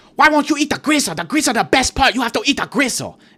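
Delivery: play-acted, high-pitched, scolding scream. Retelling a lady pushing food on the speaker's sister, imitating her screaming. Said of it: "screaming this in my sister's face".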